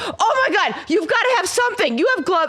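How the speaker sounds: very high, loud, frantic screaming. Recounting a visit to an oil-change place, addressing the mechanic; retelling own screaming. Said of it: "and I'm screaming at this".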